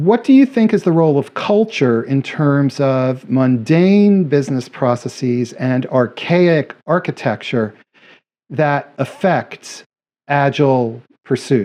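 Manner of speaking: deliberate slow reading. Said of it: "so I'm gonna read this slowly".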